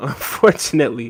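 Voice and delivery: laughing, giggling, breaking up mid-word while trying to stay serious.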